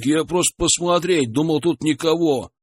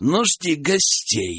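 chilling, icy, cold delivery. An unseen voice gives Valera its last phrase, in an icy tone. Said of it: "Голос выдал последнюю фразу таким ледяным тоном".

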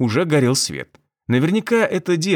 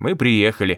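usual speaking voice

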